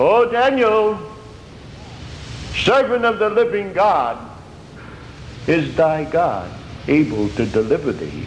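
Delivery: acted-out sorrowful, lamenting, crying voice. Retelling how a man cried out to Daniel, retelling a lamentable cry. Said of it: "he begins to cry with a lamentable voice".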